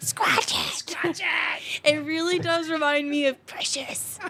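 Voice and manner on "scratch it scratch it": whispered tiny little demon voice. Reading the sponsor's slogan for a beer store ad, in a little demon voice. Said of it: "Your little, like, demon voice".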